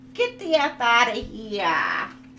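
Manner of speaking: loud, slow put-on New Jersey tough-guy accent.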